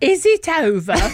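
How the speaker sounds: put-on ridiculous northern English accent. Waking up after surgery, retelling her first words, in a ridiculous northern accent. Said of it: "In this incredibly ridiculous northern accent".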